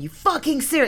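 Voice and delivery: play-acted, high, raving, disbelieving mad shout. Sitting in a car soaked by a leaking water bottle, retelling a mad shout. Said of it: "like shouting like a mad".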